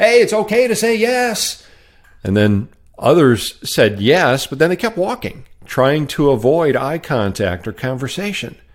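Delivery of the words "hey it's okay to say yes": high-pitched, mild mock yell. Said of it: "he'd yell at 'em".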